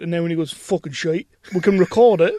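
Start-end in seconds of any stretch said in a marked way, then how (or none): 0.5-1.3 imitated voice with a blunt tone. Imitating Paul Byrne's answer about a film: Paul Byrne impression. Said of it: "Best Paul Byrne impression".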